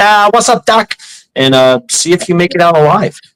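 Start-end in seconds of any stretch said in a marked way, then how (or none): 0.0-1.0 pitched-up put-on cartoon rabbit voice. Showing how to walk through the neighbourhood: Bugs Bunny impression. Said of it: "do your best Bugs Bunny impression".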